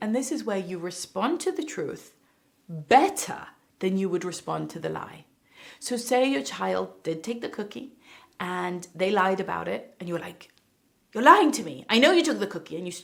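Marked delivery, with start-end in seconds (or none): 11.1-12.8 fast, raised, angry and frustrated scolding. Illustrating a parent confronting a child who lied: acting an angry, frustrated parent. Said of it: "you're angry and you're frustrated".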